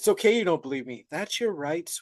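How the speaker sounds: put-on motherly, mom-like tone. Recapping a show, describing a woman answering a man who doesn't believe her; imitating a motherly tone. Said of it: "just like a mom".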